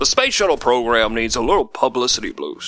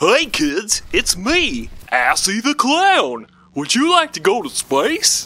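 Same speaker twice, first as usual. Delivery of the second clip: pitch going way up and bouncing around; 10 semitones higher than usual. Recording a promo in the booth as a new clown character: Assy the Clown voice. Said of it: "interesting and exciting new character".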